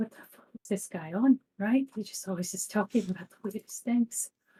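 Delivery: quiet, mumbled, grumbling, under the breath. Voicing Bella reacting to Dalton's words: muttering under her breath. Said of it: "mutter under her breath".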